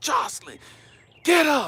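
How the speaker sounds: very high, shrill, loud, freaked-out yelling. Retelling a bathtub mishap, a parent reenacts calling to his daughter, retelling a yell. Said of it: "I'm tripping out and I'm yelling at".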